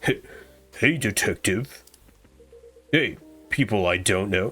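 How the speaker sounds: low, slow, dopey dumb meathead voice. Voicing a game character greeting the detective, in a dumb meathead voice. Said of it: "what does this fucking meathead sound like?".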